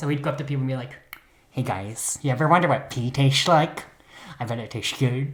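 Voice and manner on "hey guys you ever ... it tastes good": curious, wondering, eager put-on character voice. Retelling what Herb would say when he went up to people, in your Herb voice. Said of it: "this is going to be my Herb voice".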